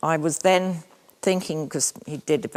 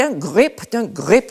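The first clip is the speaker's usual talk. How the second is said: put-on loud, called-out Belgian accent; 6 semitones higher, 8 dB louder than usual. Retelling what he kept saying while the horse took off: Belgian accent. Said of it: "in his Belgian accent".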